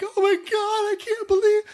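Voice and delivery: play-acted, very high blubbering sobs. Retelling a twelve-year-old's reaction to a show's big death: imitating ugly crying. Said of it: "ugly crying".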